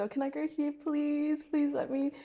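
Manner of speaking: high, pleading, begging tone. Recalling begging to be allowed to go places when younger, imitating own past begging. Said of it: "I remember begging to go places".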